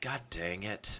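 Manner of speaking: mock muttering under breath. Retelling a friend cursing when called up: imitating a mumble under his breath. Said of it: "mumble under his breath".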